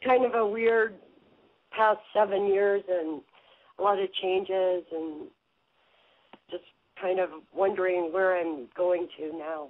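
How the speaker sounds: slightly unsteady, wobbly, a little shaky voice. A caller on the phone explains why they called: a little shaky. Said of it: "You sound a little shaky today".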